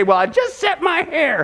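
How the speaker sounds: high, slow, drawn-out defensive tone. Acting out a wife answering her husband: imitating a defensive wife. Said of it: "she's gonna get defensive".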